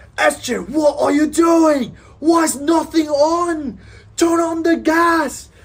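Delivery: shrill, very high, very slow top-of-lungs yell. Retelling a MasterChef judge at a contestant's station, mock top-of-lungs yelling. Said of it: "just yelling at him at the top of his lungs".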